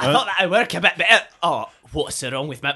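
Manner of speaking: sudden, surprised-sounding put-on Scottish accent. A character suddenly gains a foreign accent from a magic test, Scottish accent. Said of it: "Am I Scottish now?".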